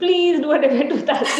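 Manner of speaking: mock begging, high, loud, laughing pleading tone.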